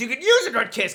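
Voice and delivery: put-on yelling character voice. Retelling what Han says to Leia in Empire: imitating Han Solo yelling. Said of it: "Han yells that at her".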